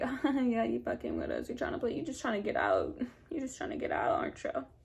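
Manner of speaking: acted giggly, laughing, sing-song, accusing teasing tone. Speaker retells teasing a friend they thought was faking, acting out teasing laughter. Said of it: "we're kind of still like laughing".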